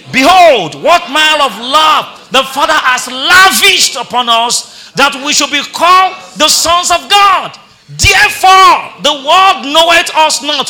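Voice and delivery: loud, slow reading with gusto, in unison.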